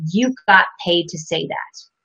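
ordinary delivery

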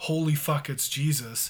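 usual speaking voice

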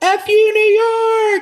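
very high, shrill, very slow, drawn-out screaming. Recalling leaving New York in a blizzard, the speaker re-enacts what they screamed: retelling a scream. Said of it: "And I just screamed".

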